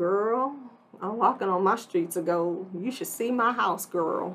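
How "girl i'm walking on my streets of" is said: plain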